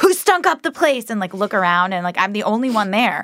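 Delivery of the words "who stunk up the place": acted, piercing, very high scream. Retelling how her mother came out of the bathroom: imitating mother screaming. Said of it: "come out screaming".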